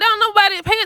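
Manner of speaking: mock piercing, shrill, very high-pitched holler. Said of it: "sorry for yelling".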